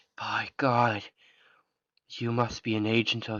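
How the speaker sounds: almost entranced, half-hypnotized trance-like voice. Voicing a cultist during a tabletop game, in an almost entranced voice. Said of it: "in an almost entranced voice".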